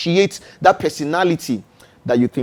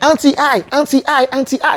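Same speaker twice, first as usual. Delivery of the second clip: put-on eager child calling out with joy, high-pitched; 12 semitones higher, 3 dB louder than usual. Imitating an eight-year-old pupil eagerly answering the teacher: imitating a joyful eager child. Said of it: "with so much joy".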